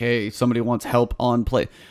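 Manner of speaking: ordinary delivery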